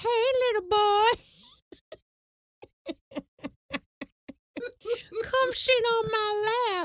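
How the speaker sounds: high-pitched, creepy cartoon voice. Describing a man, speaker compares him to the guy on Family Guy: Family Guy guy voice. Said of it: "He's like the guy on Family Guy who's like".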